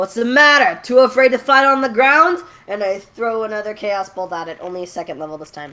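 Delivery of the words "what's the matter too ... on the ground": very loud, high-pitched taunting yell. Taunting a flying monster in character as the fight goes on: yelling a taunt. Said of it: "I'm gonna yell at it".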